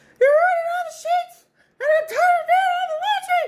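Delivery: shrill, very high, angry yelling voice. Retelling how a mom screamed at the top of her lungs: imitating a Mickey Mouse-like scream. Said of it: "She sounded like Mickey Mouse when she got mad".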